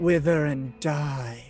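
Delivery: dark, deep, menacing, ominous voice. Voicing a character turning on a bat swarm: deep, ominous voice. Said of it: "her voice gets deep and ominous again".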